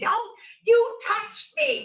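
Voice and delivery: mock screaming at a very high pitch. Speaker retelling a street confrontation, imitating the woman screaming at them. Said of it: "she starts screaming".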